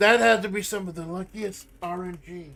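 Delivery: very loud, booming streamer-style outcry. Reacting to lucky RNG in a game, imitating Amanda. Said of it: "my impression of Amanda".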